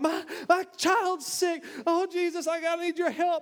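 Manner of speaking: mock pleading cry, high and drawn out. The speaker retells the crowd around jesus, acting out a crowd crying out. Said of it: "And they're crying out".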